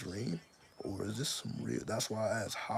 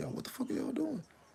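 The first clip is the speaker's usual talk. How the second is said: acted, very high, raspy, rough, confrontational holler. Retelling a man yelling at women in the house: imitating a man yelling. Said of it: "Now he's yelling at the women like".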